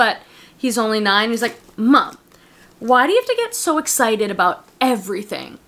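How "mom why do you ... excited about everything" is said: put-on scornful, disdainful teenager voice. Retelling what her nine-year-old son said to her, imitating a disdainful teenager voice. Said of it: "in a disdainful kind of teenager voice".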